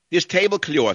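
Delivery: New York accent, pitched very high. Showing how New Yorkers speak, with a New York accent. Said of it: "this is how New Yorkers speak".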